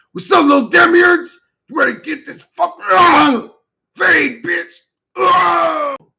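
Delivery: very high, loud action-movie voiceover with grunts. Showing how to voice a fight scene: action voiceover with grunts. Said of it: "Just like that".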